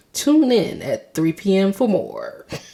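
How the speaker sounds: sing-song newscaster delivery. Joking that they sound like a news anchor, news anchor voice. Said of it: "I sound like a news anchor".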